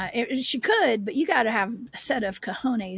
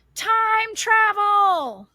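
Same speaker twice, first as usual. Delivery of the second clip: very high ringing shout, last word stretched; 11 semitones higher, 7 dB louder than usual. Retelling a voice heard while hiking in: imitating a woman yelling. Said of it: "It sounded exactly like this".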